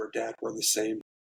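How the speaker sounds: half-voiced, hushed, confiding stage whisper. Retelling what a child tells her dad: imitating Remy half-whispering. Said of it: "she'll always come whisper".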